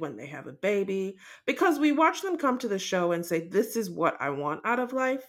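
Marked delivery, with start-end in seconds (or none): none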